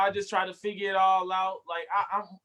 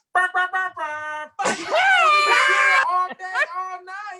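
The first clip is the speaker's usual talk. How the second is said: put-on loud shouting voice, higher and louder; 12 semitones higher, 8 dB louder than usual. Acting out a loud man answering a woman: imitating someone yelling. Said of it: "you ain't got an indoor voice?".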